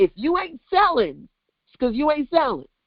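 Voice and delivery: put-on Brooklyn accent with swooping pitch. Speaker quotes something she often says, in her best Brooklyn accent. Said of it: "in my best Brooklyn accent".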